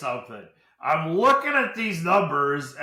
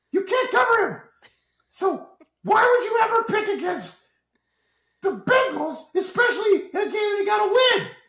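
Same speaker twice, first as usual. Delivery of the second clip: squeaky, high-pitched cartoon voice. Arguing to the guys for picking the Bengals, voice suddenly changes: Mickey Mouse voice. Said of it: "I just went to Mickey Mouse all of a sudden".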